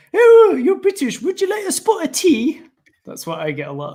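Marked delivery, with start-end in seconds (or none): 0.1-2.6 very high, loud, put-on posh British accent. Mimicking what people always say to a British speaker, in a Monty Python British accent. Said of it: "It's always like".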